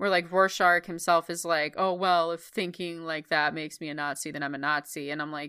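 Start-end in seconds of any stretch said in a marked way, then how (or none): none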